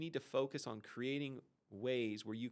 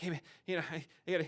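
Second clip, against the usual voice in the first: put-on hurried, breathless speech, higher and louder; 6 semitones higher, 6 dB louder than usual. Describing a reactionary person's pace, imitating breathless fast talk. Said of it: "kinda short of breath, talking fast".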